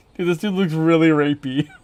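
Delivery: words breaking up in loud laughter. Making a guy look dumb, the speaker comments, laughing while talking. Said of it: "Sorry, I can't stop laughing".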